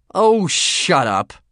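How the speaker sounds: yelled, snapping retort. Cutting her off after she blames him, snapping at her. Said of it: "I snapped at her".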